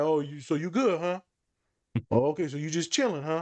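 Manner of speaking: playful, teasing tone. The speaker retells her reply to a boy who says he's good: retelling teasing. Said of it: "I'm teasing him".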